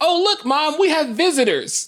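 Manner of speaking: mock very high, thrilled, excited kid voice. Retelling how a nephew greeted a visiting relative: imitating an excited child. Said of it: "he was excited".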